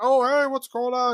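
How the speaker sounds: mock super excited, bubbling, eager, very high and loud. Retelling how a man comes over to greet Jigsaw, mock super excited. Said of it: "all super excited".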